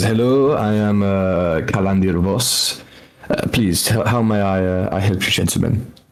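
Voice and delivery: put-on thick French accent, laid on heavy. Voicing a high elven gentleman greeting visitors, in a thick French accent. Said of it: "he's got a very like thick French accent".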